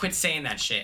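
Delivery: ordinary talk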